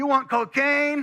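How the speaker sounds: very high, loud yelled delivery. Retelling a man who keeps offering him things, retelling a man yelling out. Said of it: "he's just yelling that out".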